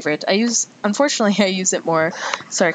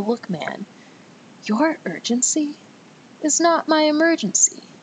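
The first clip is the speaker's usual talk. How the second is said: very slow, very high, deliberate, disdainful delivery; 10 semitones higher than usual. Showing how to answer someone rushing you, said slowly. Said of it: "you got to say it slow".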